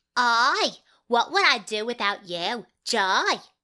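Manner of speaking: put-on London Cockney accent. An auditioning actor repeats the line in different accents, Cockney accent. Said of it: "if you'd like Cockney".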